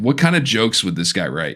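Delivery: ordinary talk, nothing marked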